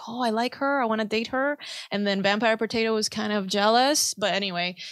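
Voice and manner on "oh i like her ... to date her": usual speaking voice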